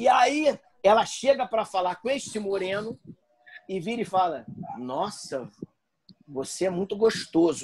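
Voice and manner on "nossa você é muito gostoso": soft put-on European Portuguese accent. Retelling what a woman said to a man: put-on Portuguese accent from Portugal. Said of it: "falou com esse sotaque lusitano aqui agora que eu reproduzi".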